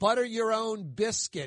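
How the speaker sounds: ordinary talk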